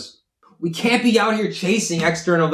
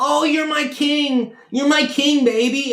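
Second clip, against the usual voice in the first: high, drawn-out, mocking girl voice; 9 semitones higher than usual. Imitating manipulative girls who flatter men: imitating a manipulative girl. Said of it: "They'll be like".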